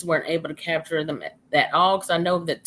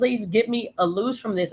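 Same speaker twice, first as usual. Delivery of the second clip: acted scream, higher pitch; 4 semitones higher than usual. Retelling being caught in briars in the woods: retelling own past scream. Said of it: "I'm screaming".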